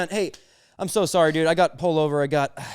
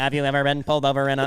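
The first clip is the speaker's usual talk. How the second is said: electrolarynx voice through a stoma device. Riffing on how an old Vietnam veteran would sound: electrolarynx voice. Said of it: "it's a stoma".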